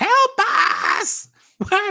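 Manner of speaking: very high, swooping, hissing undead creature voice. A game narrator voicing an undead creature to a player, hissing undead creature voice. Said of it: "It hisses at you and says".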